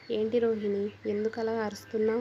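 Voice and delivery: plain reading voice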